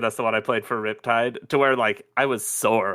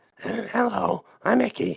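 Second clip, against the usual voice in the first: very high, creaky, rough character voice; 9 semitones higher than usual. Voice actor shows a character he played, in Icky character voice. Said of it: "It was quite the opposite".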